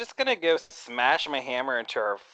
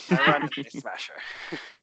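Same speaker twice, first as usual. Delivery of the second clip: usual speaking voice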